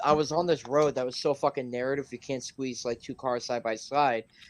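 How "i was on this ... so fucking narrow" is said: ordinary talk, nothing marked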